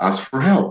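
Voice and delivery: soft, gentle voice. Retelling a mysterious voice heard while struggling in the lake: imitating a very soft voice. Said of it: "a very soft voice".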